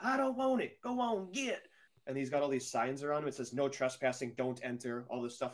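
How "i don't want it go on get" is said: very high, stretched, drawn-out shrieking scream. Retelling a man screaming from his cabin in the woods: imitating a man screaming. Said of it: "He's just screaming off the top of his just screaming".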